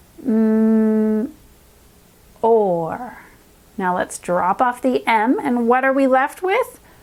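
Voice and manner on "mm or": more said slowly, sound by sound, mm and or. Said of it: "Let's go slowly together".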